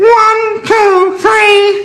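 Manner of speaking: very high, pinched, nasal tone. In a voice exercise, counting to three: nasal, pitched-up voice. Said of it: "Add a bit of nasal now".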